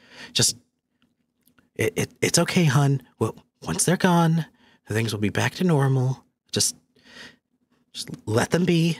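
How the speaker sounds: whispering in hushed tones. Narrator voicing a man and woman overheard through a wall; hushed whisper. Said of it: "whispering to each other in kind of like hushed tones".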